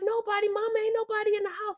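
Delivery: mock, shrill, very high screaming. Retelling answering Mama while being beaten: imitating own past screaming. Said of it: "I'm screaming".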